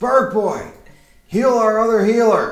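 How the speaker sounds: loud yell, pitched way up. Voicing the captain, who calls an order to Bird Boy: yelling. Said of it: "The captain yells".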